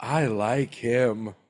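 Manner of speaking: lady's voice. Retelling a scene from an animated shoe movie, doing the lady sneaker's voice. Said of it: "the other one's a lady".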